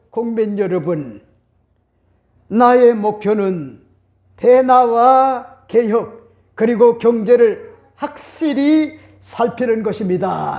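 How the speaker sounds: put-on slow, strong, unhurried Gyeongsang accent. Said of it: "영남 방언이요 워낙에 강해가지고".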